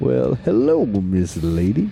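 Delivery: high, very slow, stretched out, swooping up and down. Quoting a film character at a job interview: imitating a Step Brothers line. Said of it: "when they're interviewing for the job and he goes".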